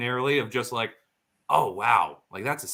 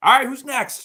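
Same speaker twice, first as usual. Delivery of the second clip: shrill, very loud, high-pitched yell; 14 semitones higher, 8 dB louder than usual. Recalling a busy job, acting out calling to people waiting: retelling own yell. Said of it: "Like yelling".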